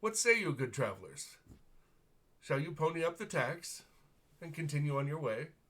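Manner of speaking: casual, breezy, cavalier, offhand delivery. Narrating a man addressing travelers, casual and cavalier. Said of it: "He's very casual and cavalier".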